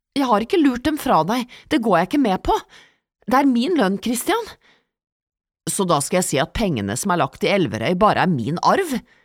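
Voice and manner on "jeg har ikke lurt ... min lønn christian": high-pitched, protesting, objecting tone. Answering an accusation of hiding money, protesting. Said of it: "protesterte Petra".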